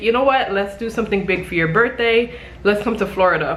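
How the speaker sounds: ordinary talk, nothing marked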